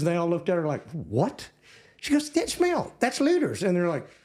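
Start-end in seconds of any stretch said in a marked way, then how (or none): 2.3-3.6 put-on very high voice with a light Texas accent. Retelling what their little sister told the Yankee girls, little Texas accent. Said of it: "with a little Texas accent".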